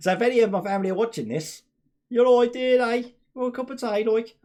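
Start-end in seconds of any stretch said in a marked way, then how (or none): 2.1-4.3 Wolverhampton accent. Addressing family members who may be watching, a speaker puts on the Wolverhampton accent. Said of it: "that's why I'm allowed to do the accent".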